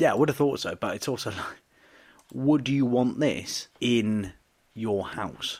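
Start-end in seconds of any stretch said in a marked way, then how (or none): none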